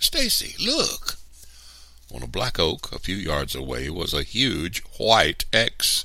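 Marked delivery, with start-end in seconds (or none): 0.0-1.2 very high-pitched sudden crying out. Narrator reads the story's first-person character calling to Stacy, crying out. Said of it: "then cried".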